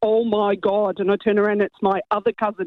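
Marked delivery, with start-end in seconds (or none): 0.0-1.0 put-on Derry accent. Retelling a cousin exclaiming from the other toilet, in a really thick Derry accent. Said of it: "in a really thick Derry accent".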